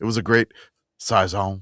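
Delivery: put-on Cajun accent in a man's voice. Praising a beer from Fontaflora, said in a Cajun man voice. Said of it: "I'm gonna say this in Cajun man voice".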